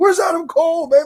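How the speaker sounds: mock shrill, high-pitched, rowdy, drunken-sounding scream. Retelling a fan who kept screaming for adam cole: imitating a drunk fan screaming. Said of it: "He kept screaming for Adam Cole too".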